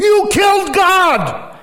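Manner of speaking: piercing, shrill, very high shriek. Recounting a man kneeling on the speaker's shoulders and screaming: retelling a scream. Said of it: "Screaming at me".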